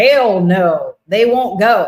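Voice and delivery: put-on slight Texan accent, drawled. Retelling what they said to the doctors, with a texan accent. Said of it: "a little bit of a Texan accent".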